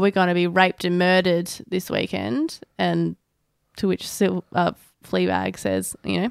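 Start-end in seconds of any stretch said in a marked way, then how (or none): none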